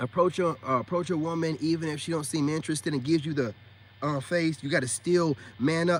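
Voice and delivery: normal talking voice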